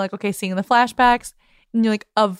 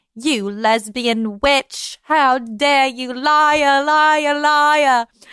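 put-on Cockney accent; 4 semitones higher, 3 dB louder than usual. Discussing a movie, acting out a jealous character's outburst: Enid in a put-on Cockney accent. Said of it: "The leaning more towards Cockney".

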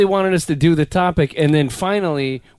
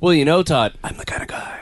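put-on stoned, mumbling voice. Imitating how a co-host used to sound on the shows: stoned Batman voice. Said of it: "fucking stoned Batman".

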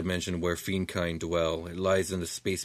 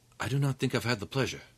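clear, high, far-carrying half-whisper; 5 semitones higher, 3 dB quieter than usual. The Knight looks at Echo, whom he has not met, Knight's carrying half-whisper. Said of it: "speak to you guys in a whisper".

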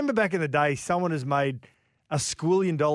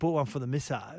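put-on laid-back drawl, quieter; 6 dB quieter than usual. Retelling what the producer asked, imitating Daddy Vass, laid back. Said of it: "And he talks like that".

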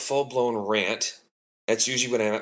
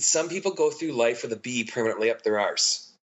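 ordinary talk, nothing marked

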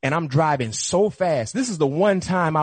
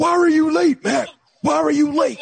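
very high-pitched, raspy, intense, hard-pressing voice; 12 semitones higher, 4 dB louder than usual. Retelling his coach questioning him about being late, mock-intense Bill Cowher voice. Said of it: "Bill Cowher seems to always be intense".

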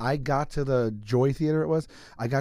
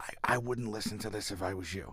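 barely-there, voiceless, lost-voice speech; 3 semitones lower, 10 dB quieter than usual. Retelling what was said onstage after losing the voice: imitating a lost voice. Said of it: "I was literally talking like this on the mic".

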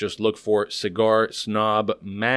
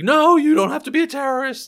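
put-on yelling, higher and louder; 5 dB louder than usual. Retelling how she yells at people on the TV show: imitating someone yelling. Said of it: "yelling at people".

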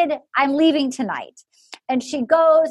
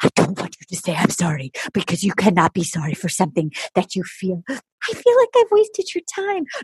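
put-on whisper, lower; 6 semitones lower than usual. Retelling a farewell scene where he starts whispering: imitating someone whispering. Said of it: "And then he starts whispering".

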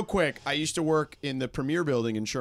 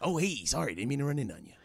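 soft, hushed radio DJ announcer delivery; 5 dB quieter than usual. Repeating what Casey said when he ran in on you, do a Casey Kasem impression. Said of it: "You do a good Casey".

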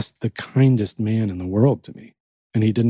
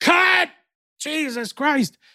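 yelling, pitched much higher. Retelling a film shoot where the director yells through a megaphone, imitating Barry Sonnenfeld yelling. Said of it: "yells through the megaphone like".

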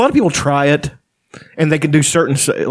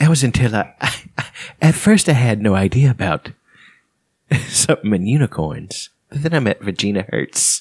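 goofy cartoon dad voice, lower pitch; 5 semitones lower than usual. Retelling how he met Virginia Hurts, in a Peter voice. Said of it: "You do a pretty good Peter".

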